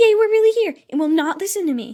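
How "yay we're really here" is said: mock gleeful, high, excited little cheer. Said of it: "My skills are all like".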